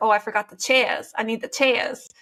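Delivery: put-on New York accent. Quoting a parents' neighbor from New York, imitating a New York accent. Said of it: "he has that like accent".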